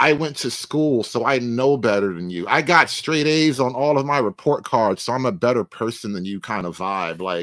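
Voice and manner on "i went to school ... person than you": plain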